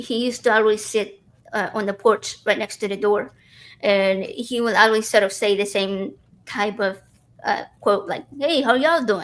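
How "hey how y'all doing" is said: put-on heavy Texan accent, laid on thick, pitched up. Retelling how a man on the porch always greeted them: very Texan accent. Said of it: "very, very Texan accent".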